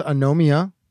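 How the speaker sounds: "Anomia" with stress landing on second syllable, NO.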